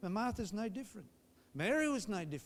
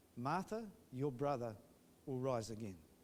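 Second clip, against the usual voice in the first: very low, soft, gentle and gracious voice; 8 semitones lower, 6 dB quieter than usual. A preacher acts out a reply to a woman whose brother died: acting out a soft, gracious voice. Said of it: "in a very soft, gracious voice".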